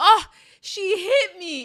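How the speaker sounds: fake, very high, very loud, shrill wailing yell. Retelling someone faking being kicked during a family fight: retelling a fake hurt yell. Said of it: "she yells like".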